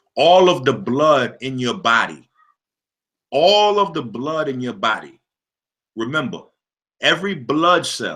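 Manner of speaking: slow, deliberate, drawn out, spelled out. Speaker repeats a phrase so listeners learn it, speaking slowly. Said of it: "say it slow".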